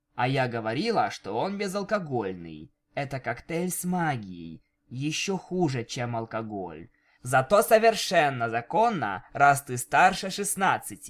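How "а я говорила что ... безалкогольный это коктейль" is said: plain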